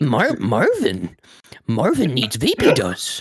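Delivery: lilting, swooping, sing-song odd sage voice, roaming pitch. Taking up a friend's idea of saying it like Yoda, Yoda voice. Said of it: "just imagine like somebody doing that shit in a Yoda voice".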